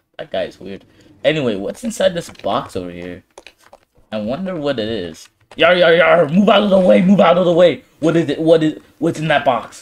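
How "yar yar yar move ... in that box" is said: enthusiastic, eager, pushy delivery. Playing Foxy rushing to see inside a box: enthusiastic Foxy. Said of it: "You are so, uh, enthusiastic today, Foxy".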